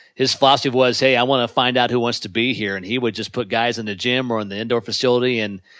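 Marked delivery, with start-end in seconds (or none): none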